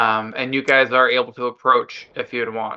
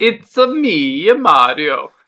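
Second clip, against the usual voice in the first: loud cartoon voice, pitch swinging up and down; 5 semitones higher, 5 dB louder than usual. Trying an impression after being coached to make the voice go up and down, Mario voice. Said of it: "Yes, exactly".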